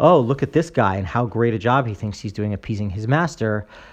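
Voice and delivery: ordinary talk, nothing marked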